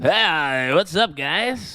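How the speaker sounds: put-on drunk uncle voice. A host says hi after being introduced as louder and more drunk, doing a drunk uncle impression. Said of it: "that was my best drunk uncle impression".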